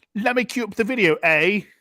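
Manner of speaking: loud full voice. Showing a co-host another impression on request: Watson impression. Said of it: "So my Watson would be like".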